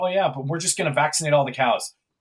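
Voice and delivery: breezy, offhand, nonchalant tone. Imitating what this guy openly says: imitating someone saying it nonchalantly. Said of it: "openly says nonchalantly".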